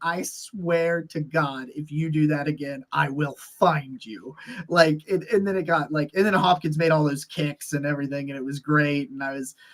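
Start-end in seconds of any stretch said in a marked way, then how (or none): 0.0-4.4 mock furious, angry ranting. Retelling a reaction to a bad backwards throw: retelling an angry threat. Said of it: "I just went after him".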